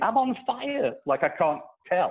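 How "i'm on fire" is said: shrill, very high screaming cry. Telling how a man set himself on fire: retelling a scream. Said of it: "and he's screaming".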